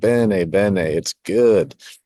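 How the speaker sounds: slow, put-on Italian American accent. Imagining your pop tasting the gravy, Italian American accent. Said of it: "your best impression of an Italian American accent".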